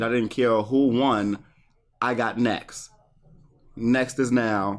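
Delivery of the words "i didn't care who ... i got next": usual speaking voice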